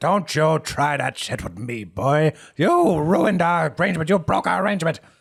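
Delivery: shrill, loud, furious, aggrieved outburst. Voicing Herb confronting a man over a broken arrangement: angry.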